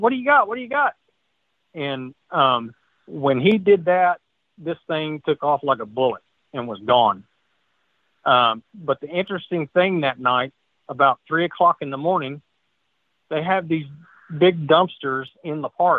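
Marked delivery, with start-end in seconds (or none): 0.0-0.9 high, loud hollering. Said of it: "was hollering at me".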